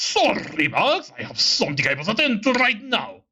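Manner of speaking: put-on villain voice. Voicing a character's line aloud: Robotnik voice. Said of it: "Why do I giving a Robotnik voice?".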